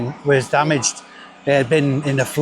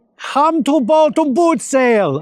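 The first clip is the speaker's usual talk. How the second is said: silly, not very convincing put-on Mexican accent; 12 semitones higher than usual. Speaker slips into an accent they can't explain: silly put-on accent. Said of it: "I don't know why I'm doing this accent".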